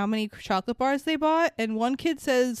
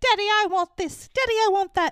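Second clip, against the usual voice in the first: put-on spoiled, bratty girl voice, high, demanding; 8 semitones higher, 4 dB louder than usual. Talking about a movie, quoting how Veruca Salt keeps demanding things: Veruca Salt impression. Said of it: "why does Veruca Salt sound like my impression".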